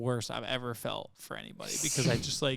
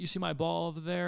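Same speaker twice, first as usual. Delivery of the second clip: mild calling out, put-on yell; 4 semitones higher than usual. Recounting a partner calling down from the top of the hill: imitating someone yelling. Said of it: "he yells out to me".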